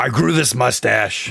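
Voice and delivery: put-on ranting talk-show voice. Showing how a long-running host sounds when he talks: Alex Jones impression. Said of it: "he sounds like this when he talks".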